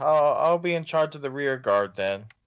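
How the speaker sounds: put-on, partly sarcastic tone. Voicing a character who agrees to lead the rear guard: half sarcastic. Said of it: "says it kind of, like, half sarcastically".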